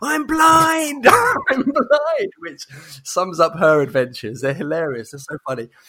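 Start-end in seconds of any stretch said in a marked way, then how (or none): 0.0-2.3 very high, very slow, drawn-out scream. Recounting a goofy girl putting on sunglasses without realizing: retelling a scream. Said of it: "and then screams".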